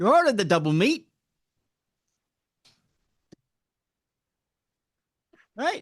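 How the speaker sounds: bad, horrible fake Australian accent. Acting out a scene with another speaker: horrible Australian accent. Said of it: "horrible Australian accent".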